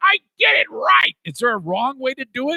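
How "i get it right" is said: put-on childlike voice of a small boy. Mocking a bowler from a played clip: imitating a bowler's little boy voice. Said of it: "he sounds like a little boy there".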